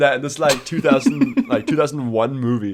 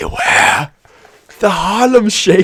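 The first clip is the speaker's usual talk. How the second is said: put-on drawn-out, slow, loud horror-movie old man voice; 6 semitones higher, 5 dB louder than usual. Acting out Dumbledore leaning close to Harry's face: Dumbledore old man voice. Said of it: "That Dumbledore leans in hella close".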